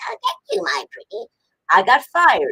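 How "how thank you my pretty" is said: very high, scratchy voice. Retelling being told at Saban to do a witch: Wicked Witch of the West voice. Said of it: "So I did it like the Wicked Witch of the West".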